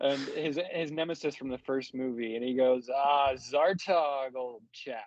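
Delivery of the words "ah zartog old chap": very slow, drawn-out, savoring each word. Quoting a movie character greeting his nemesis: Great Gatsby-like voice. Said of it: "Like, he's fucking great Gatsby".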